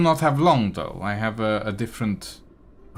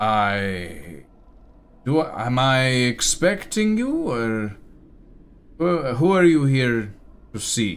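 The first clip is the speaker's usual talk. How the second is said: halting bugbear voice, long drawn-out "I"; 3 semitones higher than usual. Voicing a robed bugbear greeting the party: bugbear voice. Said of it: "looks at you all and says".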